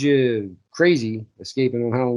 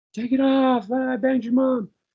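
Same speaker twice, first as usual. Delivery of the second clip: mock scream, very high-pitched and loud. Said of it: "Tom Atkins screaming".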